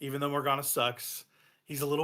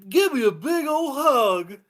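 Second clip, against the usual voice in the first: put-on very high, loud, drawn-out, loving, kindly children's-show voice; 11 semitones higher, 11 dB louder than usual. Quoting a party member's line to an enemy: Barney the dinosaur voice. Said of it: "He sounds kinda like Barney the dinosaur".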